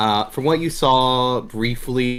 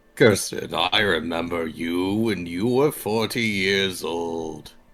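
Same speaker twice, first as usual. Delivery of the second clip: deep, very slow talking-deer voice; 4 semitones lower than usual. Voicing a deer that turns back to a character and speaks. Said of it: "The other one turns back, looking at you in the eyes and goes".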